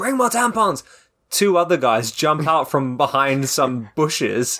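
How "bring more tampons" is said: mock very high-pitched shouted holler. Retelling a story, the speaker acts out a man calling for more, imitating someone shouting. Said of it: "He shouts out".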